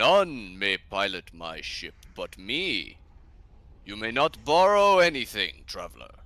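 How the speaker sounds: booming, swooping, very loud resounding voice. Storyteller voicing a figure in a hooded robe calling back to the traveler, booming voice. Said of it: "a booming voice uh, calls back to you".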